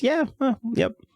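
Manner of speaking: offhand yep, way up high.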